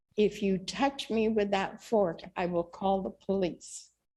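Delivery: hushed, quiet, soft-spoken voice. Retelling a warning spoken to a woman holding a fork, in a quiet tone. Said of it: "in a quiet tone".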